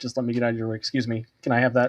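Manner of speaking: put-on polite monster voice. Voicing a monster from a game setting as an example: Polite Devourer voice. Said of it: "a monster in Titan City called the Polite Devourer, who's like".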